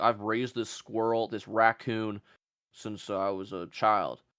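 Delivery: put-on slow, drawling voice of an old Southern man. Mocking pet owners with a crocodile: imitating an old Southern man. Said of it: "some old man".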